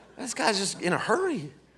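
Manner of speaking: soft, laid-back Southern voice. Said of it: "to a Southerner, like".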